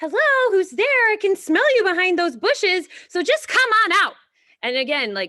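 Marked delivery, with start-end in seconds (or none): 0.0-4.1 put-on silly storybook girl bear voice, very high and loud. Reading a story aloud to demonstrate voices, speaker voices the girl bear. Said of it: "the narrator's voice is different than the the girl bear".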